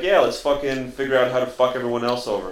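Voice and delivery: normal talking voice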